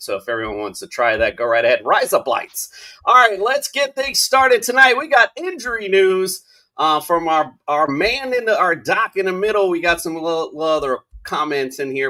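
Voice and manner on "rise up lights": Australian accent. Showing how a phrase sounds like razor blades: australian accent. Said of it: "in an Australian accent".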